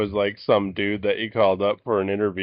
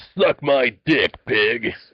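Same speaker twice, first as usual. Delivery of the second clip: punchy action-hero voice like a game hero; 3 semitones higher, 3 dB louder than usual. Joking around while another speaker is on the phone: Duke Nukem voice. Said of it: "like, a Duke Nukem voice".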